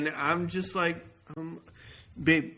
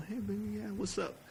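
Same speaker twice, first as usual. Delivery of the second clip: too soft-spoken, undersold, pitched-up, too quiet; 5 semitones higher, 10 dB quieter than usual. In a sketch, a guy chats up a girl in a loud place, speaking too quietly. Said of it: "You can speak a little louder".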